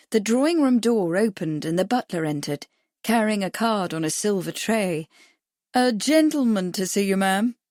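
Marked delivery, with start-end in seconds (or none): 5.9-6.7 slight stress on the word 'gentleman'. Butler enters with a card and announces a visitor, slight stress on 'gentleman'. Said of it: "There was a slight emphasis on the word gentleman".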